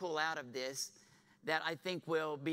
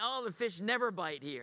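dry, deflated, discouraged sarcastic tone; 4 semitones higher than usual. Preaching on the call of Peter, acting him out: imitating sarcastic, discouraged Peter. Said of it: "he's sarcastic, you know, he's discouraged".

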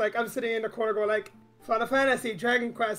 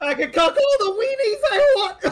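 loud voice cracking up very high; 11 semitones higher, 7 dB louder than usual. Joking with the others about weenies, voice cracking. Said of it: "That was a voice crack".

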